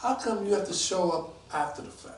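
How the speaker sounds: usual speaking voice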